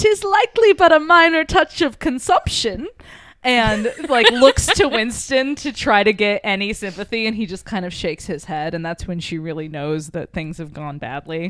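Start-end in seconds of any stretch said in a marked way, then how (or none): 0.0-2.9 put-on very high, loud, old-timey British accent. Retelling Jess trying to break the ice after a coughing fit, in an old-timey British accent. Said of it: "in like an old timey British accent again".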